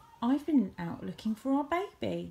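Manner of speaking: ordinary delivery, nothing marked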